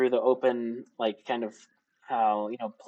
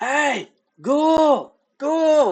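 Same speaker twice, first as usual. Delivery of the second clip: very loud, very high-pitched hollering yell; 9 dB louder than usual. In a tabletop game, a character cups his mouth and calls to a ghoul, yelling. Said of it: "and he yells".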